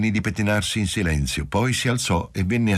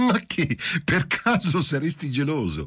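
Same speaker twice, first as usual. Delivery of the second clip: bursting into joyful, flattered laughter, pitched up; 8 semitones higher than usual. Talking with Marcello about another woman, she bursts into flattered, joyful laughter. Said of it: "Ella esclamò scoppiando in una risata lusingata e gioiosa".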